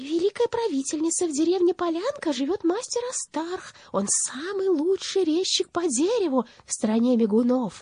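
tiny, thin, very high whistling voice. Narrator reads a bat reporting to the witch ruler, in a tiny whistling voice. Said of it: "промолвила тонюсеньким свистящим голосом".

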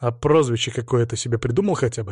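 ordinary delivery

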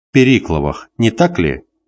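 usual speaking voice

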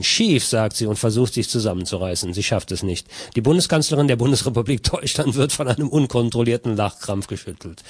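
usual speaking voice

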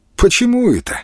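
good-natured, friendly, very high-pitched voice. Reading a story, voicing a man who asks a question back, good-naturedly. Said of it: "добродушно спросил Валера".

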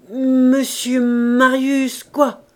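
loud, stuttering, halting delivery. The old man asks Basque about Monsieur Marius, stammering. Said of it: "Il bégaya".

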